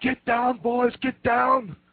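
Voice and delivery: high, slow, panicked yell. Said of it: "starts yelling and screaming".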